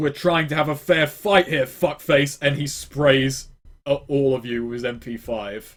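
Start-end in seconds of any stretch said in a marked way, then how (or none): 0.0-2.4 furious barked outburst, anger kept contained. Voicing an enemy who gets up after being knocked away: angry yell. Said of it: "He just yells".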